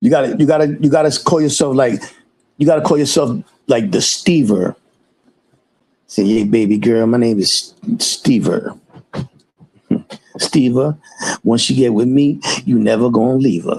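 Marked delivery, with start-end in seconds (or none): 6.2-13.8 put-on low, smooth, slick old-school pimp patter. Coaching Steven on what to say in the chat, in fly old pimp talk. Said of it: "say some fly old pimp shit like that".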